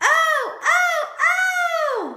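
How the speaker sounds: very high, loud, exclamatory reading with drawn-out oh's. Modeling reading aloud for a child: reading with exclamation. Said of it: "let's read it with some exclamation".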